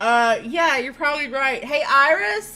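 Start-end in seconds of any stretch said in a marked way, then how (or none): 1.6-2.6 high-pitched, far-carrying shout. Calling out to a companion across the lava: yelling across lava. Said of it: "Sana yells across the lava".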